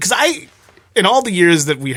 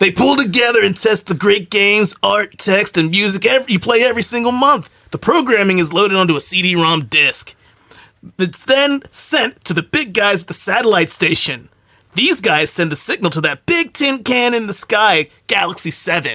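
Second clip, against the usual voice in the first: put-on nineties douchey voice, higher; 5 semitones higher than usual. Reading a website's how-it-works page aloud: nineties douchey voice. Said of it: "in my most nineties douchey voice".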